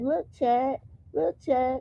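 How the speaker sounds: giggly, laughing through the words. Retelling how she showed Junior to the camera: imitating someone giggling. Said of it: "she kiki and laughing like".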